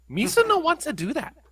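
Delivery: very high-pitched alien creature voice. Saying their brain refuses to picture it, the speaker answers in a Jar Jar Binks voice. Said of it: "I now just hear [name] doing a Jar Jar Binks voice".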